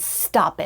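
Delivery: play-acted sharp, irritated, fed-up scolding tone. Retelling how she was told to stop crying: mock-irritated scolding. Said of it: "she said it like that, like, like a parent scolding their kid who's irritated".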